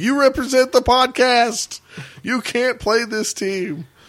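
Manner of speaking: very high-pitched yelling. Recounting yelling at him in the hall during a marriage conflict: retelling a yell. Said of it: "I was in the hall yelling at him, going like".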